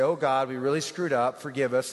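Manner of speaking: ordinary talk, nothing marked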